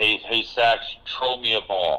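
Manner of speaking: put-on slow, very strong New York or Jersey accent. Retelling a fan's shout from the stands: imitating a strong new york accent. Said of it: "very strong New York or Jersey accent".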